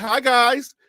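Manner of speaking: mock suspicious-sounding tone. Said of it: "some people would say".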